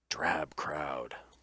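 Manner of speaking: theatrical, hushed stage whisper. Narrating a character who speaks to the players in a stage whisper. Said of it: "he kind of gives you a stage whisper".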